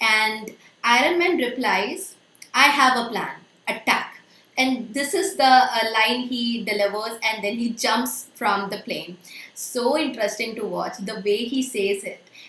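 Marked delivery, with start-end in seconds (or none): 2.5-4.2 loud, forceful stress on the word attack. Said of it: "that force he has put on this word attack".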